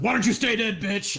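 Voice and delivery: put-on, high-pitched scarecrow monster voice. Voicing the Scarecrow as it slashes a player: scarecrow monster voice. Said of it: "as it slashes away at you, it says".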